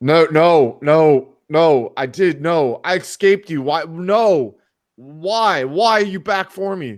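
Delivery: very high, drawn-out scream at top of lungs. Playing a character cornered by a creature: screaming at the top of lungs. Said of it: "fucking screaming, like, at the top of his lungs".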